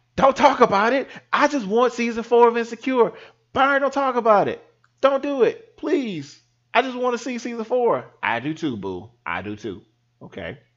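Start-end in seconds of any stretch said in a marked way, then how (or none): 0.2-8.1 shrill, very high, frantic screaming. Podcast host acts out what his girlfriend screams at him: imitating girlfriend screaming. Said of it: "I can hear my girlfriend screaming".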